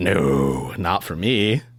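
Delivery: low, demon-sounding voice. Voicing the bird's line during the story, in a demonic voice. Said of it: "you get really demonic sounding just then?".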